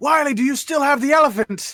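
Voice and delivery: high-pitched, loud shout. Player in character, turning to shout to a companion: shouting. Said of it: "I turn and I shout to Wiley".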